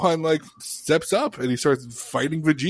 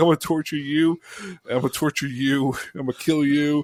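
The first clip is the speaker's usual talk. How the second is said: put-on angry villain voice. Retelling a scene where Vegeta gets real pissed: imitating furious Vegeta. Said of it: "he gets real pissed".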